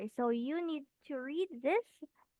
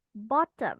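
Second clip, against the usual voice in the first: "bottom" drawn out, deliberate, slow, pitch raised; 3 semitones lower, 8 dB louder than usual. Modeling a vocabulary word for a learner, slowly on 'bottom'. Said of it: "You just read it slowly, like".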